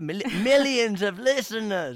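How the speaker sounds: big, loud, high, dramatic announcer voice. Talking about radio sessions reaching a huge audience, repeat the number of listeners in the X Factor voice. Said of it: "in the X Factor voice".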